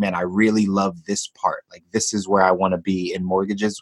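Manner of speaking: normal talking voice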